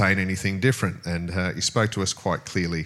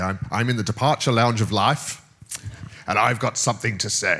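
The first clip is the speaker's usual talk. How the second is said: put-on South African accent; 3 semitones higher than usual. Speaker recalls a man who'd stand up and speak; imitating his South African accent. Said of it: "in his South African accent and say".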